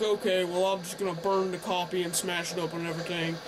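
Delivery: ordinary delivery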